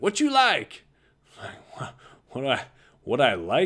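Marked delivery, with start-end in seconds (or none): 0.0-0.8 put-on Texas drawl, much higher. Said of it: "he had that Texas drawl".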